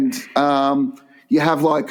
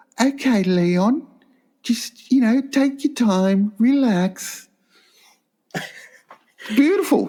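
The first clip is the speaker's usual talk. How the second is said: put-on high-pitched English accent in a girl's voice; 8 semitones higher than usual. Imagining a girl encouraging leon, speak in an english girl's accent. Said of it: "like an English accent. A girl just say".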